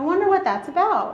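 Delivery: lighthearted, light, curious musing tone. Modeling a non-critical way to reflect on a choice: light and curious. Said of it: "You can hear the tone of my voice. There's a lightness to it. There's a curiosity".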